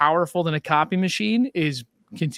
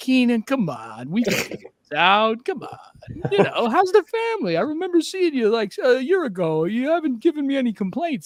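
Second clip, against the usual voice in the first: sweet-talking, pitched-up New Jersey salesman voice; 8 semitones higher than usual. Retelling a sweet call from a copier salesman: imitating a New Jersey copier salesman. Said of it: "a New Jersey copier salesman who's like".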